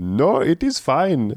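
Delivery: put-on Middle Eastern-accented speech. Retelling a TV scene, quoting a character: imitating a Middle Eastern accent. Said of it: "the reason Andrew did that accent".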